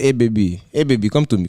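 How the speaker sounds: Haitian-accented speech. Asked about living with a Haitian accent, he tries it out: Haitian accent. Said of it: "rizzing bitches up with that Haitian accent".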